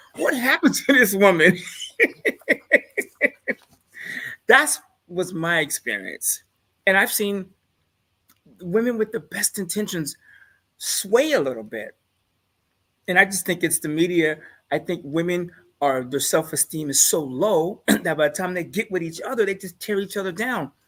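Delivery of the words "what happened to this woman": loud, laughing disbelief. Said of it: "I'm like".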